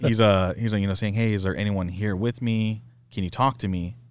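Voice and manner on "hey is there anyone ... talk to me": put-on cute little boy voice. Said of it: "his little cute boy voice".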